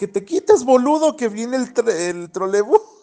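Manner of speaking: shrill, very high-pitched shouting holler. Retelling finally yelling at a man to move from the trolleybus: imitating own past yelling. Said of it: "hasta que ya le grité".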